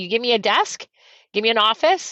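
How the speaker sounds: ordinary talk, nothing marked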